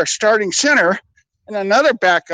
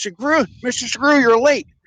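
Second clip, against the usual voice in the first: big, hefty put-on voice; 4 semitones higher than usual. Recalling the dishwashing boss addressing the speaker's brother at work: Bill Maine's big voice. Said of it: "he had this big voice".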